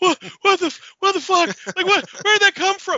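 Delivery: mock very high, loud, breathless hyperventilating panicked babble. Pitching a scene, acting out a character freaking out: acting out panicked hyperventilating.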